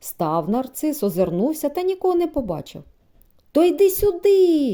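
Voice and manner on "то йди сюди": loud, high shouted call. A hunter alone in the thicket calls out once more, shouting again. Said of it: "крикнув він знову".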